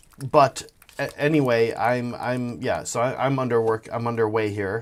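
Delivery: slow, halting, stammering, rambling speech. Painting miniatures on stream, the speaker updates viewers while stuttering. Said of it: "sorry for my stuttering".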